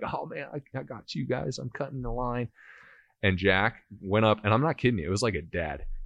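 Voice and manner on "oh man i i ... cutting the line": mock, high, talking through laughter. Retelling a kid's reply after cutting the line: imitating laughing while talking. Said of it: "he's laughing".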